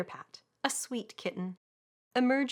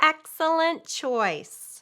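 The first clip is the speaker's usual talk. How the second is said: nasal, high, raised voice; 6 semitones higher, 8 dB louder than usual. Reading a story, the narrator voices the sales monkey at the counter: nasal voice. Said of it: "says the sales monkey in a nasal voice".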